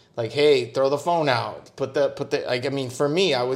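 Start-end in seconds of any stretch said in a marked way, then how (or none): none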